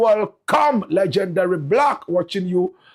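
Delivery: plain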